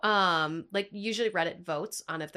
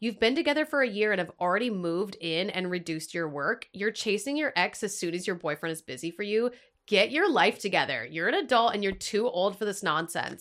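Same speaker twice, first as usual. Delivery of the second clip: normal talking voice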